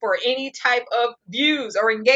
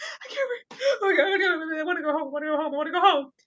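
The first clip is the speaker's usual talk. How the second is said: mock breathless hyperventilating panic, high and fast; 5 semitones higher, 4 dB quieter than usual. Retelling how she panicked up the mountain: imitating someone hyperventilating. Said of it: "she's hyperventilating".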